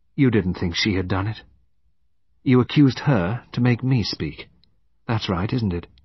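usual speaking voice

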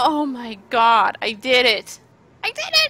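very happy. A player on a game stream has just done it, very happy. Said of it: "I'm so happy right now".

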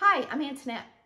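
rushed, syllables blurred together, rattled off. Recalling how they used to introduce themselves, saying name very quickly. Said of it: "I would say it so quickly".

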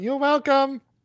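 high, shrill, shrieking shout. In a role-play scene, calling back to a creature, yelling. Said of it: "I yell".

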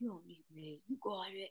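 very quiet, deep, grumbled delivery. Quoting Steve from Sex and the City talking to Big, deep grumbling Steve voice. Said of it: "it was so deep and grumbled".

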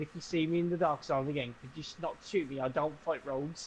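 ordinary delivery

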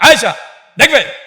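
loud, mock angry snap.

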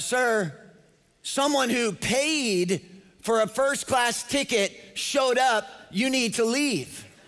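mock dismissive, rude attitude, drawn out. First-class passenger retells a flight attendant telling him to leave, mock rude attitude. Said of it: "she said it with an attitude".

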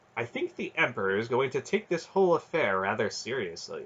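ordinary delivery

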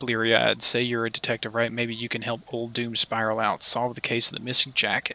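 plain reading voice

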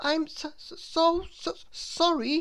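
stammering nervously. Reading a story, a man bumps into a stranger and apologizes with a nervous stammer. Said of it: "stammered Mr. Good nervously".

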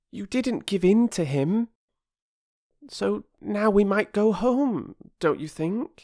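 gentle, soothing tone, pitched very high. After a bargeman drove them off, a child calms another, soothing. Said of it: "Phyllis said soothingly".

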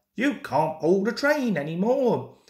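ordinary delivery

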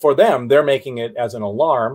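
ordinary delivery

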